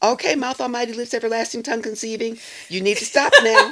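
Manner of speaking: rapid, high-pitched scolding. Quoting what the speaker's mother used to say to them; very fast. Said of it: "she would say it real fast".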